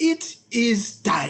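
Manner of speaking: put-on voice of an animated cartoon character. Retelling what his body told him, speak in a Rafiki voice. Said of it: "in the voice of Rafiki from The Lion King".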